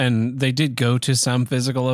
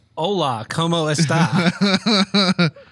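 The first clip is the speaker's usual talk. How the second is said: bad, heavy English-speaker accent on Spanish words; 4 semitones higher than usual. Podcast host voicing his cat co-host saying hello, Reacher the Cat's gringo Spanish accent. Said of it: "He speaks in the same Spanish accent that I have".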